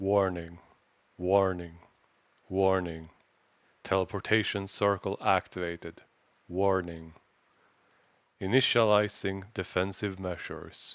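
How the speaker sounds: low, bassy, deep robotic voice. Voicing the thing seen at the top of the stairs, low, bassy robotic voice. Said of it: "With a very low, bassy, and, for the lack of better words, robotic voice".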